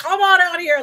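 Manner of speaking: screamed, shrill and very high. Retelling a scene from a show, imitating Goliath screaming. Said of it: "him screaming at everything".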